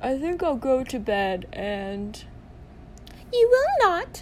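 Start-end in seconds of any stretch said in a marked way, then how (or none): 3.3-4.2 sharp, shrill, high, loud snapped tone. Narrator reads Mrs. Weasley's reply to Fred, snapped. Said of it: "snapped Mrs. Weasley".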